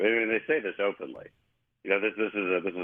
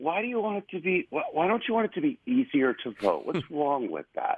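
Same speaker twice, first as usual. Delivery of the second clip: mock patronizing, falsely compassionate, pitched-up tone; 8 semitones higher than usual. Speaker imitates what Democrats say in reply: mock condescending, compassionate voice. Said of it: "they say it in this sort of condescending, compassionate voice".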